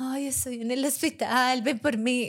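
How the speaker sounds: spoiled, pampered, whiny, pleading voice. Speaker acts out someone calling from the hospital, imitating a spoiled, whiny voice. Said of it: "con voz de mimado".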